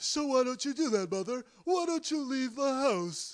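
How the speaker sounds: loud, highly emotional cartoon voice, very high, swooping wildly. Speaker acts out young Norman Bates talking back to his mother, highly emotional Norman Bates impression. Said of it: "a highly emotional Rocky Bullwinkle was my impression of young Norman Bates".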